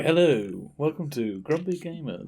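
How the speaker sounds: hushed, very quiet, soft murmur. Mocking a co-host's quiet show intro: a hushed ASMR-style intro. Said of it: "It's like A S M R or something with you".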